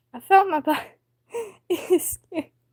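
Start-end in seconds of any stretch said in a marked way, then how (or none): none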